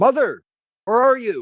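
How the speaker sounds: loud, high ringing yell.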